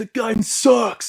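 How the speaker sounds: high, slow, drawn-out griping tone.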